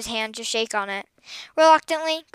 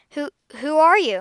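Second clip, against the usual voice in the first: stuttering, higher and slower; 4 semitones higher, 4 dB louder than usual. Finding a strange boy on the front step, the speaker asks him, stuttering. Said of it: "Graciela stuttered".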